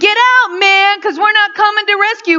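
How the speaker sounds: put-on yelling. Retelling what men on a news video yelled at a drowning man: imitating men yelling. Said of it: "they're yelling at this drowning man".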